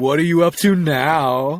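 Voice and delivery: put-on faintly eerie, half-creepy, drawn-out tone. Speaker quotes her catching him combing the castle in the dark, imitating a mildly creepy tone. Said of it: "she'll say in this like really kind of like not creepy creepy tone".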